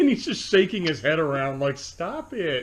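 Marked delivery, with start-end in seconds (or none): 1.8-2.6 mock faintly irritated, mildly annoyed, dismissive tone. Describing a Godzilla fight scene, the speaker voices Anguirus, mock mildly annoyed. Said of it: "Like he's so mildly annoyed by that".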